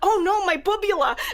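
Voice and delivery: put-on Brooklyn accent. Suggesting what a character could say on seeing him in the sweater, in brooklyn accent. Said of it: "in a Brooklyn accent".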